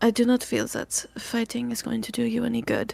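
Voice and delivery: menacing, very intimidating tone. To a tied-up captive, after wiping mud off their face: intimidating, quiet tone. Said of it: "In a very intimidating, quiet tone".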